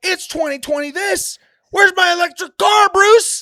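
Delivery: furious yell, very high and very loud. Retelling a cartoon scene where Joker yells in Batman's face: imitating Joker yelling. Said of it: "he starts yelling at him in his face".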